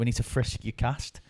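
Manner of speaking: ordinary delivery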